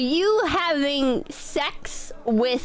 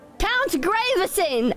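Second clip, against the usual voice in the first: pitched-up voice calling out; 5 semitones higher than usual. Player's character calls to count graveson while producing the manticore, loud voice. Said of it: "I say in a loud voice".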